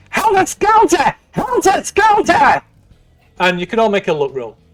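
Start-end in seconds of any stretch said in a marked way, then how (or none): 0.1-2.6 very high, unhinged, shrieking madman voice. Narrator voices a man in a fight, as a shrieking madman. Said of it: "He shrieks".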